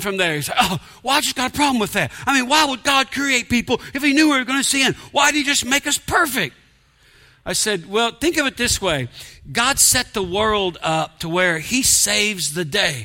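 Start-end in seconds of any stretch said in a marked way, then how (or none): 0.6-6.6 fed-up, exasperated, pitched-up complaining tone. Retelling a skeptic's question about God: imitating an exasperated man. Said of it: "talking like he's exasperated".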